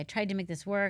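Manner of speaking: plain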